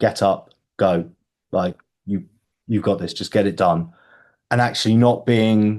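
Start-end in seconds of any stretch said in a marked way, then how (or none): 0.0-3.9 firm, stern, no-nonsense tone. Showing how the inner voice sounds when pushing to get going: firm, stern inner voice.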